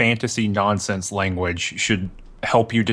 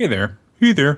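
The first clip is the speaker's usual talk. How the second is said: overly friendly fake Canadian accent, loud and high; 5 semitones higher, 5 dB louder than usual. Being introduced by a friend, greeting everyone in a bad friendly Canadian accent. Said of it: "that bad friendly Canadian accent".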